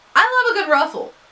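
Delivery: loud, high, suddenly blurted-out yell. Talking to herself about making version A, yelling. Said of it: "I didn't mean to yell that either".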